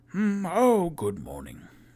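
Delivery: put-on very old voice, high, swooping. Voicing Volo as he comes in the morning: super old Volo voice. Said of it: "I put on a super old voice for him".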